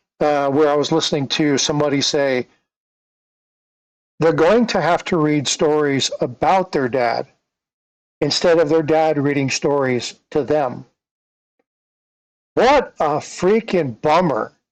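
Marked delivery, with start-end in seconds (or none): none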